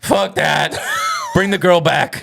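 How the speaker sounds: put-on drunk yelling. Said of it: "Ron yells out".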